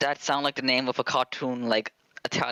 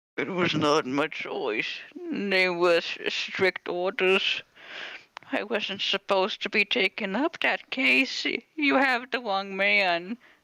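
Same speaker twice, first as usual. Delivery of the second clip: put-on old man voice, higher pitch; 7 semitones higher than usual. Voicing a character when someone calls for it, in an old man voice. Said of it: "Old man voice".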